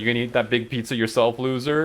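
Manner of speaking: ordinary delivery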